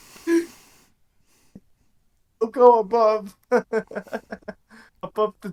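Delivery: very high, loud speech broken by laughter. Repeating a friend's funny phrase, laughing while talking. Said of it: "I can't talk".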